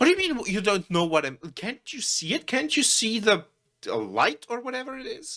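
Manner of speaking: exasperated, fed-up outburst, very high-pitched. Voicing a frustrated man arguing with another man outside: frustrated. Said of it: "getting frustrated at this point".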